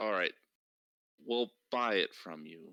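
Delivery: grudging, distasteful, forced-out delivery. Voicing a dwarf who agrees to buy something: said like a dirty thing. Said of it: "She says it like it's, ugh, like a dirty thing".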